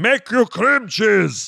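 very high, slow barbarian cavewoman-style speech. Acting out a cave woman offering cream cheese: imitating a barbarian cave woman. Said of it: "she speaks like barbarian".

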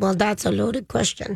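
put-on mixed Russian, German and Minnesota accent. Quoting her interview answer to an interviewer, Anna Sorokin in a Russian-German Minnesota accent. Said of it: "that's my Russian-German Minnesota accent".

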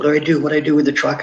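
mock urgent calling out. Retelling how his best friend, driving the truck, yelled at him: imitating someone yelling. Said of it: "he yells at me".

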